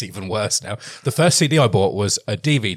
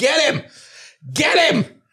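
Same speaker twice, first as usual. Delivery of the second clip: mock shrill yelling, very high and long-stretched. Retelling shouting at fighting cats out the window: retelling a shout. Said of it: "I shout".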